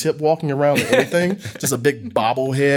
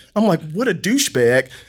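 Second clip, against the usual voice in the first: ordinary delivery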